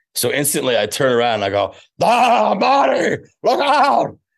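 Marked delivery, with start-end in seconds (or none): 1.9-4.1 very high eccentric scientist voice, one word stretched out. Retelling how you instantly turned around to fix this, do your best Doc Brown impression. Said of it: "I do like my best Doc Brown".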